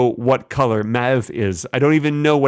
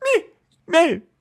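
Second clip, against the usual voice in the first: whimpering dog voice, higher. Saying a color name again: whiny little dog sound. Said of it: "a whiny little dog sound".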